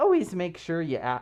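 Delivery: voice cracking. Giving advice about wearing fursuit heads into stores, voice cracking. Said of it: "I don't know why my voice cracked".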